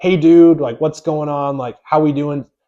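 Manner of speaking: laid-back, loose, casual buddy talk, acted. Retelling how they used to talk to team members: imitating own casual slang tone. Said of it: "slang tone".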